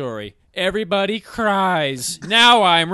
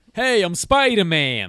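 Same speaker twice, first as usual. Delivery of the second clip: laid-on fake Brooklyn kid accent. Imagining a DC version of Spider-Man, talking like a fake Brooklyn kid. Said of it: "he would have talked like a fake Brooklyn kid".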